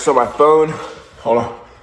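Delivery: breathless, winded, out-of-breath delivery. Talking to viewers of a video while pausing, out of breath. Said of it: "Out of breath".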